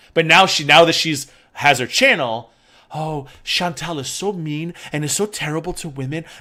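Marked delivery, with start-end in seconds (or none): 2.9-6.2 mock sickly sweet tone, higher. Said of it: "they put on the sweet and sickly voice".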